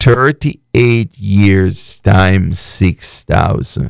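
slow, low, deliberate, step-by-step delivery. Walking listeners through the math, repeating a figure for them: saying it slowly. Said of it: "Let me say it slow".

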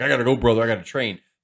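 put-on wrestling-star voice, dismissive and brushing off. Retelling Hogan refusing a phone call: Hulk Hogan impression. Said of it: "Hogan's like".

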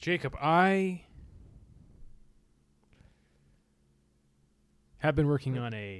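mock dramatic delivery. Showing off what an acting class taught: mock dramatic delivery. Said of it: "I've been working on my dramatic delivery".

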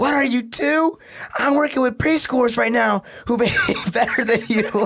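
mock furious, high, angry screaming. Retelling a mother on speakerphone before school staff: imitating mom screaming. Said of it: "distorted 'cause she's fucking screaming".

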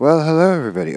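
overblown, loud, high voice. Opening with a hello to everybody, too loud. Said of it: "I'm too loud already".

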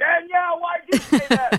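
playful yell at very high pitch. Teasing a caller about a cousin, playfully yelling at someone. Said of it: "I'm yelling".

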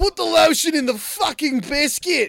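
very high-pitched, loud put-on Australian accent. Performing a scene line as Buffalo Bill with an Australian accent. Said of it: "That was Australian Buffalo Bill".

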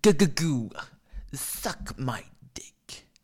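very slow, comic, every word drawn out. Doing impressions for the audience: Andrew Dice Clay impression. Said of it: "Those are my impressions".

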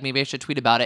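ordinary delivery

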